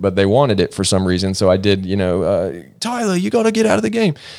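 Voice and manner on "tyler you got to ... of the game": bad, untrained British accent, pitched very high. Actor recalls playing a British soccer coach in a film, in a bad British accent. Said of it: "I had never learned a British accent".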